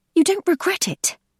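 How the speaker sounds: piercing very high voice. Narrator reads a character's retort to the man who tried to kiss her, shrill. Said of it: "says Rachel in a shrill voice".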